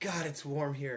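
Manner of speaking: sluggish, lazy tone. Acting out the voice on one shoulder in the morning: lazy inner voice. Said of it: "this guy's saying".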